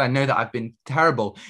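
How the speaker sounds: ordinary delivery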